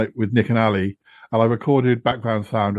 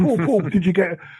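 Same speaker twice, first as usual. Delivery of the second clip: put-on desperate pleading voice, higher; 8 semitones higher than usual. Retelling a phone call in which Yeti Uncle John desperately asks for ice creams: imitating desperate Yeti Uncle John. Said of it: "desperate for me to buy particular ice creams".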